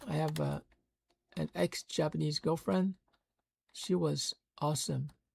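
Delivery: quiet, emotional, moved in the moment. Listing friends who speak other languages, recalling an ex-girlfriend, getting emotional. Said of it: "Sorry, getting emotional".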